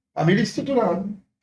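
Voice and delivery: ordinary talk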